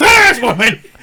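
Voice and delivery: mock yelling, shouting. Retelling an earlier yell from the other speaker: imitating someone yelling.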